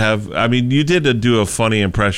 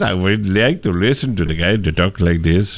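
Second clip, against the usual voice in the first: overdone fake accent, not quite Swedish. Asking to hear a Swedish power-pop artist from a documentary, mock Swedish accent attempt. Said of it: "it doesn't really sound like that. He talks more Swedish".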